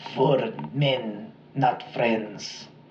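quiet, poor, put-on German accent. Retelling the words a man barely got out, in a bad german accent. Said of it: "That was a really bad German accent".

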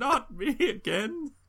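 cracking voice, very high. Retelling a line by the character Joe, in Joe's cracking voice. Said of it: "But he says it in like a cracking voice".

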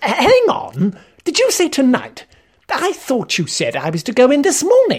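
very high, animated, swooping tone. Narrator reads the first-person narrator's reply to a man's demand, protesting. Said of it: "I protested".

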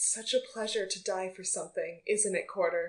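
quiet, close half-whisper. In a role-playing game, a player's character leans into an enemy's ear, half-whispering. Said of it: "lean into their ear and I'm going to whisper".

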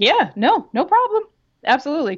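mock-terrified voice. Retelling being robbed at fifteen, answering the man with a knife: acting out terrified compliance. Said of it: "because I'm 15 and terrified".

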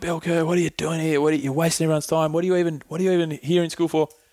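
mock yelling. Recounting school, acting out a teacher who yelled at him, retelling a teacher's yell. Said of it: "she yelled at me like".

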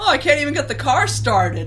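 high, loud, exasperated. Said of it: "standing around exasperated".

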